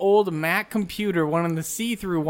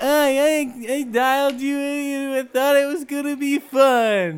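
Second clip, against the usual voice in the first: high, stuffy, blocked-nose put-on voice, drawn out; 8 semitones higher, 4 dB louder than usual. Pretending to be Andy on a phone call: put-on Andy voice with a cold. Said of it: "you sound like you have a cold".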